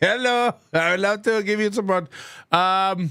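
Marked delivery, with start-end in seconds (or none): 0.0-2.1 fast, generic put-on Indian accent. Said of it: "a generic Indian call center voice".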